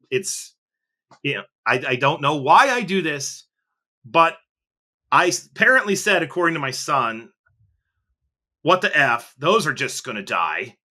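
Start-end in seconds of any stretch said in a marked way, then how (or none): 8.6-10.6 acted-out aggressive tone, lower pitch. Recounting what their son says they blurted out aloud, retelling an aggressive outburst. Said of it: "in a very aggressive way".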